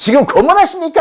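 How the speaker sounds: mock irritated tone.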